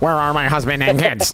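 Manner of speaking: mock robot-like line reading. Mocking an actress's line from a trailer: imitating a robotic line reading. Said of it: "great read there".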